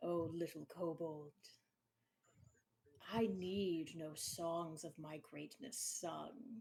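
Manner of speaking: deep, rumbling voice of a vast beast. A great and powerful being answers a kobold, deep rumbling creature voice. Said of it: "A deep rumbling chuckle".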